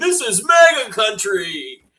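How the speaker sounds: very high, shrill, drawn-out shriek. Imagining the attacker in a red hat: imitating someone screaming. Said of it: "have a red hat on and scream".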